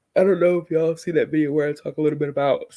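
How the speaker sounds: mid-yawn. Host chatting with live viewers about her reading month, yawning. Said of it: "Sorry, I'm yawning".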